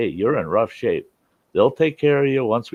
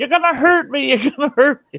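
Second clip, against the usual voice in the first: put-on frantic, very high, loud, panicked screaming; 5 dB louder than usual. Rescuer retells a trapped driver's words during the extraction, retelling panicked screaming. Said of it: "she starts screaming".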